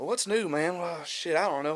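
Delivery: talking to himself, back and forth. Retelling a comedian's stage habit between stories: imitating someone talking to himself. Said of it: "Like, talking to himself".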